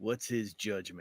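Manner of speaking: very soft, hushed, acted half-whisper. Voicing a character asking an ally a question over the shoulder: half-whispering. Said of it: "just whispering, like".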